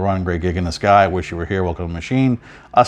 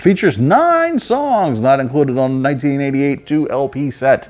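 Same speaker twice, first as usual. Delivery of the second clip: sing-song, pitched-up infomercial announcer voice; 7 semitones higher than usual. Describing a three-disc set's contents: infomercial announcer voice. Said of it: "Look at me using my best infomercial voice".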